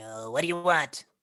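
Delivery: put-on tiny, little fairy or pixie creature voice. Storyteller voices a little pixie brandishing its shield and spear, in a little pixie creature voice. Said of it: "I can't whisper in this voice".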